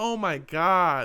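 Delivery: put-on exasperated, fed-up tone, God drawn out. Reacting to a story someone is telling: exasperated. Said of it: "every time I'm saying, like, "Oh my God," like, exasperated".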